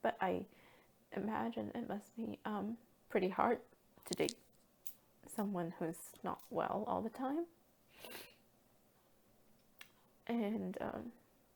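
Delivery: tearful, crying voice. Speaker who is often unwell talking about the partner who helps them, crying. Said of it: "I don't know why I'm crying".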